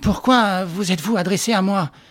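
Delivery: quavering, trembling, shaky voice, forcing calm. A man, trying to regain control, questions his visitor, trembling voice. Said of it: "reprit d'une voix tremblante".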